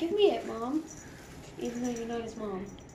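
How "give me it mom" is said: loud, bossy, demanding, insistent cat voice. Speaking for a cat that grabbed a toy back: voicing the cat's demand. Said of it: "He's like".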